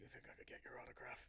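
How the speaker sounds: whispered, mumbled mutter under the breath. A guard leans in after being given a gift, muttering. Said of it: "he kind of mutters".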